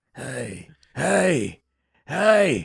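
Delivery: put-on rough, raspy, creaky voice. Trying the raspy voice again: put-on raspy emphysema voice. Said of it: "I sound like I got emphysema".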